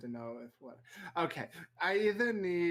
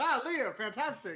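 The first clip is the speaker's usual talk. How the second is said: put-on, high, bright, feigned delight; 8 semitones higher than usual. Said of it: "I'm like".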